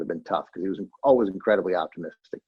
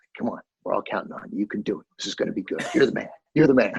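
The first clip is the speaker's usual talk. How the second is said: hushed, quiet stage half-whisper; 2 semitones higher than usual. Retelling how a colleague encouraged the weatherman on air: imitating someone half-whispering. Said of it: "whispering in his ear".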